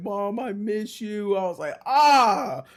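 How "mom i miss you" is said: slow, tearful, weepy words spoken through crying. Retelling how a fighter talked after his last win, imitating someone crying. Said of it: "he starts crying and doing that shit about his mom".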